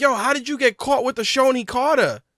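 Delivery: acted-out, angry, mad shouting. Retelling watching a fight, imitating yelling at the screen. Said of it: "I yelled at the screen".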